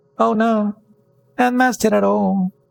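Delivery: very high, faint, tiny goblin voice. The goblin behind the iron door replies: tiny goblin voice. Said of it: "making tiny voices".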